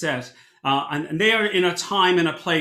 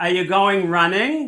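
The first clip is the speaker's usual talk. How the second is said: put-on nasal Baltimore accent; 3 dB louder than usual. Imitating an upstairs neighbor asking an obvious question: nasal Baltimore voice. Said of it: "she has this nasal voice from Baltimore".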